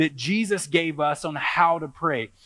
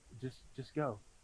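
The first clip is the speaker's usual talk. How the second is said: mock, very quiet, drowsy, half-asleep whispered mumble; 4 semitones lower, 20 dB quieter than usual. Retelling the wife's reply to a child at night: imitating a half-asleep wife. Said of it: "My wife wakes up half asleep and goes".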